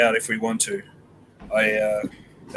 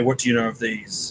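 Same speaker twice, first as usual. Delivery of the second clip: ordinary talk, nothing marked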